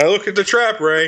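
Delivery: mock-annoyed delivery. Quoting a favorite line from a scene, retelling it annoyed. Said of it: "He's, like, annoyed".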